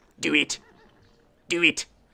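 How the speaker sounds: strained, forced voice pushed hard, repeated. Playing a strategy game after capturing Berlin, the speaker does a Palpatine impression. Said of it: "That's my best Palpatine impression".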